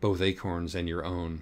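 ordinary delivery

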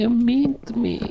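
very high-pitched, tearful crying. After being insulted by a teammate during a game, a player complains, crying. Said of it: "You're crying?".

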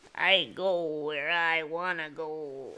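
put-on low, aged-sounding old man voice. Talking over X-Men Animated, trying the line again: Wolverine impression sounding old. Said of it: "You sound like you're 80 years old".

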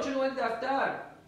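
plain

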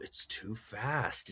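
put-on muttering. Retelling what someone said while watching a movie: imitating someone muttering under breath. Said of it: "under your breath".

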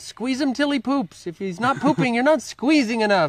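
put-on high German-accented voice. Quoting a friend's joke about horses, Ian Tipton's high-pitched German accent. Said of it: "in this funny little high-pitched German accent".

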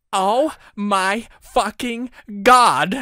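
high, drawn-out screaming. Narrator, just told about a favorite band's concert, screamed. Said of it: "I screamed".

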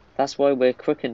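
ordinary delivery

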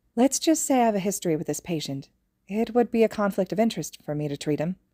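plain reading voice

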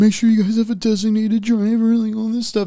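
shrill, very high, panicked scream. Retelling a high school party raid, imitating J P screaming. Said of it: "J P's screaming".

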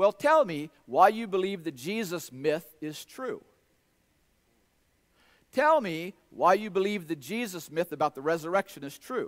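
usual speaking voice

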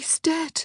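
very high, grief-stricken, heartbroken whisper. Narrator reading Daphne's words to Antony, whispered. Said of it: "Daphne whispered".

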